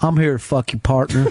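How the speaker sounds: put-on low Southern gentleman voice. Imitating Ed's greeting: imitating Ed as Southern gentleman. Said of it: "maybe not gentleman".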